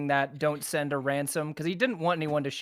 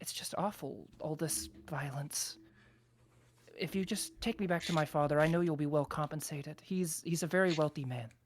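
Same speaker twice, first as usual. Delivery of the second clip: put-on frightened young girl voice; 6 dB quieter than usual. Voicing a rescued girl thanking the party: frightened young girl voice. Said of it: "and says".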